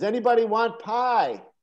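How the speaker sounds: acted high-pitched yelling. Telling a family story, acting out the aunt yelling out to anybody in general. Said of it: "she yells out to anybody in general".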